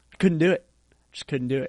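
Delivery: ordinary talk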